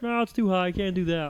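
cartoon frog puppet voice. Retelling what someone said on the show: Kermit the Frog voice. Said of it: "He put, like, a Kermit the Frog".

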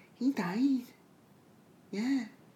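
high, hushed, whispered mother voice.

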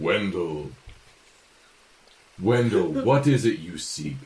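stagey, resounding druid character voice. The narrator voices a druid calling out to wendell: booming druid voice. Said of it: "Wendell hears the booming druid voice".

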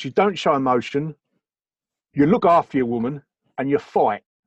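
attempted London Cockney accent. Trying out an accent while listing three rules from growing up, in Cockney accent. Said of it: "I'm going to try very hard to muck up this Cockney accent".

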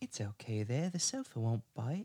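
soft, well-done put-on English accent. In a story scene, a character speaks to two burglars in an English accent. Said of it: "do that English one that you do really well".

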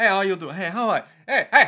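put-on Italian accent. Describing a restaurant guy who keeps coming to the table, in a bad Italian accent. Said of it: "our bad Italian accents".

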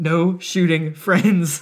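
stern tone. Retelling what a man's wife said to the group, imitating a stern parent tone. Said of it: "sternly parenting in the same tone".

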